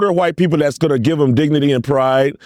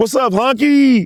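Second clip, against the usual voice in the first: mock, very high, proud and prideful voice; 10 semitones higher than usual. Imitating people greeting each other, imitating someone saying it proudly. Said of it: "They gonna have pride when they say it".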